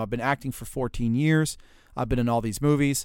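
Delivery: ordinary delivery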